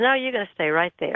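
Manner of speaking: ordinary delivery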